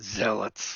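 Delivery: growly, strained voice spoken through gritted teeth.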